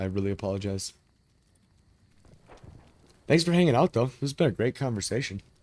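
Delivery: speaking while chewing. Speaking to listeners on a hot mic, talking while chewing. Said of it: "Sorry if my mic is hot and I'm chewing".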